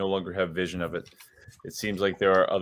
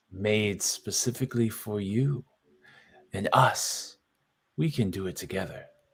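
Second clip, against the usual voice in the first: soft, hushed, quiet whisper; 5 dB quieter than usual. Game master voicing a character speaking to a player, whispering. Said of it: "starts to whisper to you about the staff".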